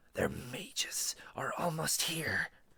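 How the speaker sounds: slow, hissing whisper. Reading a story aloud, voicing a crouching woman who hisses: hissing woman's line. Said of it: "an Ascali woman said as she caught up and abruptly stopped. She had the same alarming look about her, as though mostly person yet part monster, but the protruding bones from her forearms rested agains".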